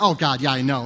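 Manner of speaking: mock smug, snotty, arrogant know-it-all tone. Retelling how they used to answer God, mock-snotty, arrogant tone. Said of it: "in a snotty tone, arrogant".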